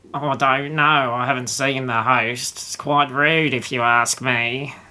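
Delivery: put-on small gnome character voice. Game master voicing a small gnome talking to a player's character, in gnome character voice. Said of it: "and it is a small gnome with spectacles. / and it is a small gnome with spectacles. He's got grey hair, he's got a bit of a like scowl on his face, and he's wearing a tweed jacket with patches on the".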